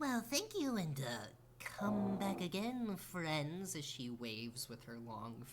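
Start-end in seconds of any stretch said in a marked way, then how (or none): 0.0-3.8 put-on elderly woman voice, much higher pitch. Game master voicing the shop's owner as the players leave, old woman shopkeeper voice. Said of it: "And you see this old woman lady as she turns around, / And you see this old woman lady as she turns around, like one eye bigger than the other, / And you see this old woman lady as she turns around, /".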